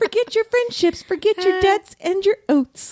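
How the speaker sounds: put-on ghostly voice. Quoting a ghost's warning from a book: imitating Elena's ethereal voice. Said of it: "I like that voice".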